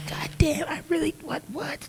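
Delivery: high-pitched, breathless, shocked whisper.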